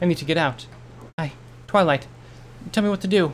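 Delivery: high, frightened, stumbling stammer. Starlight begs twilight for help, stammering in fear. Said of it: "She stammered, fear stealing all reason".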